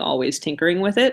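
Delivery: ordinary talk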